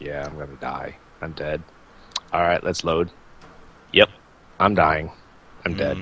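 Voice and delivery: deadpan, low, flat monotone drone with no reaction. Showing own usual reaction to dying in a game: imitating own monotone reaction. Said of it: "where I just speak monotone".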